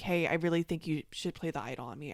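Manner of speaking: mock muttering under breath. Recounting what a fellow player said at council, imitating someone muttering under breath. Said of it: "She's like kind of under her breath".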